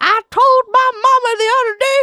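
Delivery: very loud, booming, high, shrill Southern American drawl. Imitating a southern-style voice in a chat about american accents, telling a made-up line. southern american accent. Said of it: "There's two American accents I know of".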